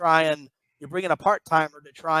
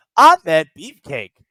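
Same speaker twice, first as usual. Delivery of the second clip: put-on robotic voice, blasted out like synthesized speech; 8 dB louder than usual. Suggesting how to say a name, in a TikTok robot voice. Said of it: "try to use the the robot voice".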